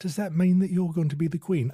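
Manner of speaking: put-on Cockney accent. Retelling an anecdote of a young princess asking her sister, Princess Margaret in Cockney accent. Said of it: "I don't know why she would have a Cockney accent".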